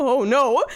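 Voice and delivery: put-on panicky voice. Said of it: "the transition from, like, "Hee hee ha ha" to".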